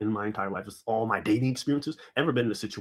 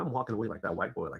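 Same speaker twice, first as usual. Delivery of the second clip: ordinary talk, nothing marked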